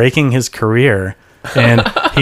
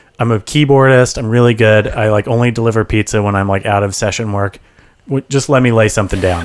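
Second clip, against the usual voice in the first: normal talking voice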